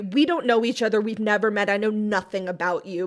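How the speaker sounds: mock rapid, overconfident, cocky speech. Retelling how a man introduces himself to a woman: imitating fast overconfident talk. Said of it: "he speaks so fast and so, like, overly confidently".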